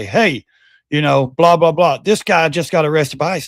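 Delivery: ordinary talk, nothing marked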